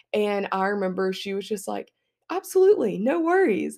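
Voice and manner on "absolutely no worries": very high-pitched, sugary sweet voice. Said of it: "in the sweetest high-pitched voice".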